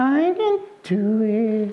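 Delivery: put-on timid, high, slow, unsure baby piglet voice.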